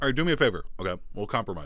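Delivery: speaking through a mouthful of food. A man chewing jerky talks with the mayor, talking with mouth full. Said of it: "My mouth is full".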